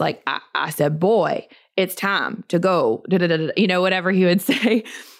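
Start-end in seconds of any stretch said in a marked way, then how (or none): 0.5-3.0 slow, drawn-out, drawled cartoon rooster voice. Quoting how the speaker's dad talks, in a Foghorn Leghorn voice. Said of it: "that Foghorn Leghorn Looney Tune cartoon voice".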